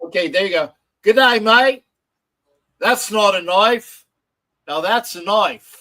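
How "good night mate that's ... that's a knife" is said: loud, slow, deliberately laid-on put-on Australian accent. Doing an accent for chat to rate out of ten: put-on Australian accent. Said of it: "your best impersonation of an Australian accent".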